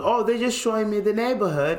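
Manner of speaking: put-on British accent. Retelling a man's excuse when asked why he was in Moss Park at night: British accent. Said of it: "he kept talking in a British accent".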